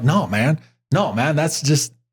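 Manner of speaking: ordinary talk, nothing marked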